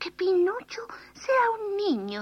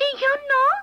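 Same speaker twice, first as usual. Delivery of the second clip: tiny, high, piping little voice; 8 semitones higher, 6 dB louder than usual. Narrating a story, a new voice chimes in after the puppet maker speaks: tiny little voice. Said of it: "preguntó una vocecita".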